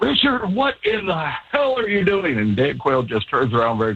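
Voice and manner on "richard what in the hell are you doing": mock shrill screaming, very high and frantic. Telling a story about bouncing all over near the golf course, imitating your friend screaming at Richard. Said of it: "is screaming".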